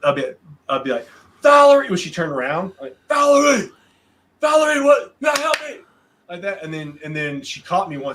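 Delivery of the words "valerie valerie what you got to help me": very high, pitched-way-up yelling call. Retelling calling out a name to get her attention: imitating own shout. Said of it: "I would yell at her at Walmart".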